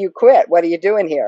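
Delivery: normal talking voice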